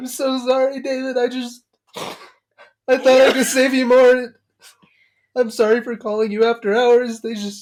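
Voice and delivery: very high, loud sobbing, crying through words. Speaker retells a phone call with David, imitating own sobbing. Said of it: "at one point I just started like sobbing".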